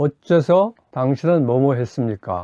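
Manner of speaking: ordinary talk, nothing marked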